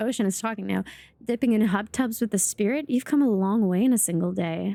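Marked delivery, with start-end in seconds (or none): none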